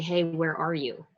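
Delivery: ordinary delivery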